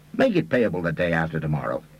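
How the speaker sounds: plain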